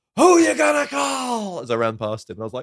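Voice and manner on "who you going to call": mock shouting, higher and louder. Retelling a crazy guy outside the subway: imitating someone shouting. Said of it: "he just started shouting".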